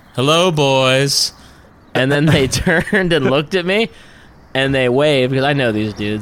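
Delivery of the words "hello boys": put-on sinister, creepy voice, "boys" stretched long. Rolling down the car window to greet some guys, in a put-on creepiest voice. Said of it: "in my creepiest voice".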